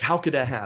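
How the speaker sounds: ordinary talk, nothing marked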